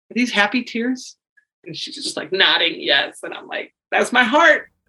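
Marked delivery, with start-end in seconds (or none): 0.1-1.1 hushed, soft, gentle, pitched-up tone. Retelling what they asked a tearful woman who hugged them, acting out speaking softly. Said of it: "I just said real softly".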